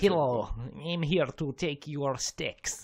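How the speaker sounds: fake Russian accent. Quoting a character's line, in a stereotypical Russian accent. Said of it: "a pretty bloody stereotypical and not great Russian accent".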